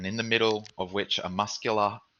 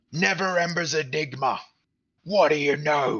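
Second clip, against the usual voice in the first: very raspy, really hoarse, raised voice; 8 semitones higher, 6 dB louder than usual. Running a game scene, voicing someone heard punching things, in a really hoarse voice. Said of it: "this really hoarse voice going".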